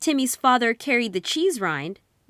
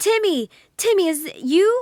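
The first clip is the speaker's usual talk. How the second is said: excited, high, little mouse-like squeaks; 7 semitones higher, 4 dB louder than usual. Reading a story aloud, Timmy's mother and father answer from the tin house, in excited squeaking voices. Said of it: "two excited voices began squeaking".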